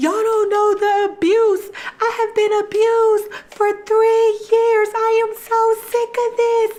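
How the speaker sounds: acted-out, very high-pitched sobbing outburst. Retelling how a woman picked up the camera and spoke, imitating someone crying. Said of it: "starts crying and was like".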